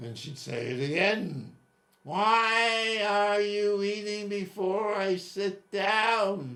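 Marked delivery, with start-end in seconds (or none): 2.0-6.6 very high, bone-piercing, shrill, drawn-out whine. Retelling what a woman repeatedly asked his father when he grabbed bread: piercing voice. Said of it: "With that voice that seems to have gone to school so it could pierce through bone".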